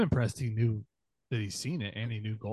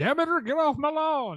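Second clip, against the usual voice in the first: put-on old Southern man voice, much higher pitch; 8 dB louder than usual. Teasing another speaker's way of saying Demeter with an old Southern dude voice. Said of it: "You sound like an old old Southern dude on his front lawn".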